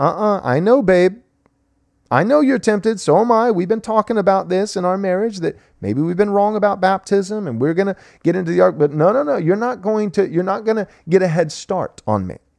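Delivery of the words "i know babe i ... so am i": put-on jolly cheerfulness, much higher pitch. Acting out a husband speaking to his wife, with put-on jolly cheerfulness. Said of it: "with a jolly cheerfulness".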